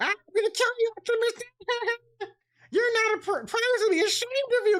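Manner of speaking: light toad-like voice, very high-pitched. Imagining a voice actor's take on Scourge, in a light toad voice. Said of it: "almost like a toad voice for Scourge".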